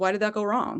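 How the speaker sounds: ordinary delivery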